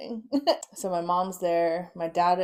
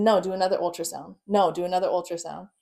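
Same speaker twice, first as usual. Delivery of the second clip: ordinary talk, nothing marked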